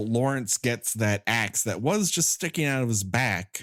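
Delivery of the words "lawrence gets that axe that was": ordinary delivery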